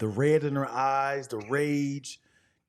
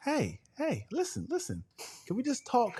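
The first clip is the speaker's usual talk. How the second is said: soft, fake-calm, reasonable-sounding tone; 11 semitones higher, 6 dB quieter than usual. Speaker acting out how they win an argument, mock-calm tone. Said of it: "trying to be calm".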